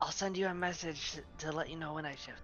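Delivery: hushed whisper, muffled by a hand. Secretly talking while nobody has noticed yet, whispering into hand. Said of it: "so I'm still whispering into my hand".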